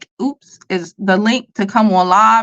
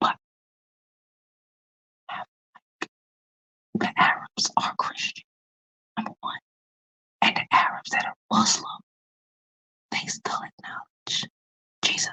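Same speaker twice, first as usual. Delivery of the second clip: hushed whisper, quieter. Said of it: "I gotta whisper".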